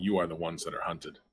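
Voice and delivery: fast, growled like a big cat. Voicing the voice the players hear, in a growl like a tiger. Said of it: "a growl of like a tiger".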